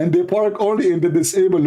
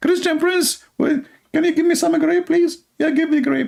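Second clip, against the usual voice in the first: put-on very high-pitched, girly, girlish voice; 11 semitones higher than usual. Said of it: "stop speaking like a girl".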